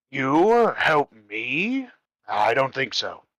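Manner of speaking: haughty, scornful, arrogant, booming voice. Game master voices a character answering the players, in an arrogant tone. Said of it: "he says in a very arrogant tone".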